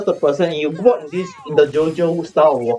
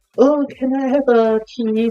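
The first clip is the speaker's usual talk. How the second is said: high, slow, put-on girly feminine voice; 7 semitones higher than usual. Describing a man who speaks like a female, man putting on a female voice. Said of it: "speak like a female in the voice".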